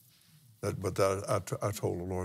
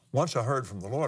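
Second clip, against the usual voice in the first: plain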